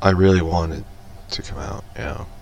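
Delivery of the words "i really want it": ordinary talk, nothing marked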